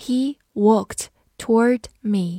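slow, careful reading, word by word.

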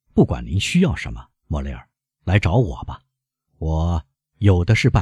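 ordinary delivery, nothing marked

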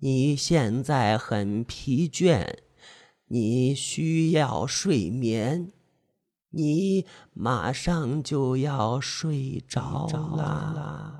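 eerie, ghostly voice, spaced one syllable at a time. Reading a story, an old woman speaks beside a swinging metal ball, ghostly, word by word. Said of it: "用鬼魅般的声音，一字一顿的说道".

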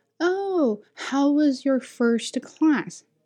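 put-on high, slow, drawn-out, condescending voice. Retelling a teacher's question after the first class: imitating a condescending tone. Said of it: "talk to me like I'm R-worded".

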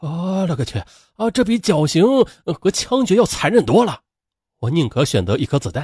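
horrified, appalled tone. Retelling a witness reporter's words about the execution: imitating a horrified recollection. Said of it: "他惊恐的回忆".

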